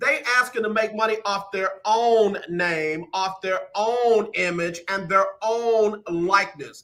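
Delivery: spelled out slowly and deliberately. Speaking to people who haven't figured it out yet, spoken slowly. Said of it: "Let me say it slow".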